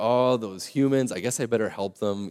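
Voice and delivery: normal talking voice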